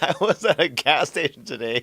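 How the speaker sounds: slow, giggling and laughing through the words. Retelling what a player said, can't stop laughing: laughing while talking. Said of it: "Sorry, I can't stop laughing".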